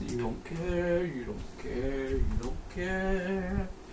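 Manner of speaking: high, slow silly put-on voice.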